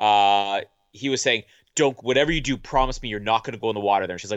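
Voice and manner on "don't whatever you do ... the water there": fast, dead-serious, super serious. Retelling the partner's dad's warning before the honeymoon, mimicking a super serious warning. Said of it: "who was like super serious about this".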